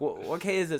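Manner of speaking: put-on yell. Retelling yelling a question to someone during a race: imitating own past yell. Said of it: "yelled out".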